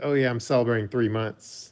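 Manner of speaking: quiet aside. Asking the others if they heard her: imitating someone saying it quietly. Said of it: "quietly say".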